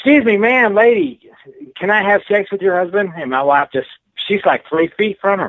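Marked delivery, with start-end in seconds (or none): 0.0-3.1 play-acted, raised, high-pitched hollering. Retelling how his wife yelled at a woman in the room: acting out a yell. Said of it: "and she yells at her".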